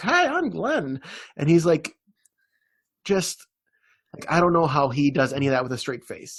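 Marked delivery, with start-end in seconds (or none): 0.0-1.0 tiny, very high, squeaky voice. Describing a funny guy and imitating his squeaky voice. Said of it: "he just has this squeaky voice, like".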